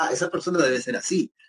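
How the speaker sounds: ordinary delivery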